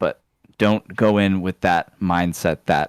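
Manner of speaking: ordinary talk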